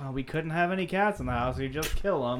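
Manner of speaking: plain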